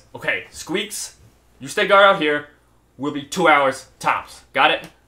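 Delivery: weird, strange, loud creature voice, not birdlike. She points down at the hole and gives an order, in a weird voice. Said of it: "and then says with a weird voice".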